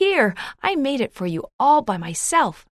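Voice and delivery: with pride. A child returns with a gift she made for the narrator: proudly. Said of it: "she said proudly".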